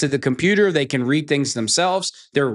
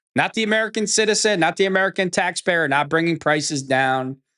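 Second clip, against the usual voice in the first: normal talking voice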